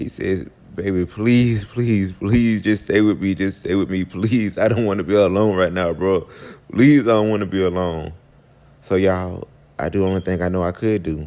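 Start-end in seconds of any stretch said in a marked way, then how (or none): 0.7-8.1 put-on tearful crying, pleading voice. Retelling a plea not to be left alone: imitating someone crying. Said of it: "Quan starts crying".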